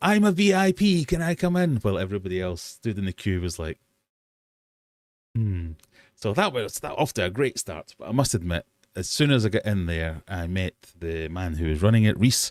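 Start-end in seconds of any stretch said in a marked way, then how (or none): 0.0-1.8 very high, very slow, drawn-out hollering. Speaker reenacts their past self at a door while others queue, retelling a shout. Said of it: "it ended up with me shouting at a door".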